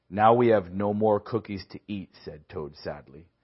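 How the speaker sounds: plain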